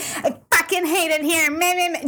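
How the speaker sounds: full-on high, drawn-out yell. Retelling how a passerby in the office yelled at nine o'clock, retelling a yell. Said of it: "just yelling".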